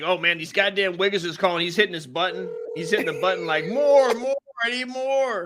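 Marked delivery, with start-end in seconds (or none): none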